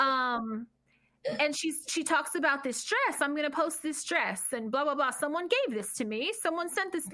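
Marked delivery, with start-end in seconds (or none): 3.2-7.1 weird, strange, fake Australian accent. Retelling a video where Brit talks about a dress: imitating Brit's weird fake accent. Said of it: "fucked up, weird accent".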